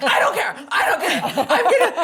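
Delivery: acted, frantic, very high, very loud outburst. Retelling the morning he insisted on a night nurse: imitating a freaked-out man. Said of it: "Like freaked out".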